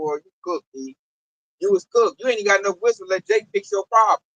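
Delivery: ordinary talk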